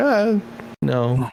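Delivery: put-on mopey sad voice. Imitating the other speaker's earlier answer: imitating a sad tone. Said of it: "sad tone to your voice where you're like".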